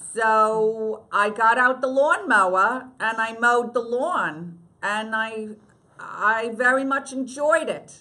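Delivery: Long Island-accented speech. Asked by the interviewer for a line of bad writing from the show, in a Long Island accent. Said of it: "in your Long Island accent".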